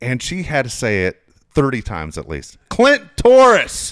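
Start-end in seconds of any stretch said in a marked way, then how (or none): 2.7-3.9 shrill, very high, very loud screaming. Retelling how a mom screamed a name into the phone: imitating someone screaming. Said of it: "She's screaming in the in the phone".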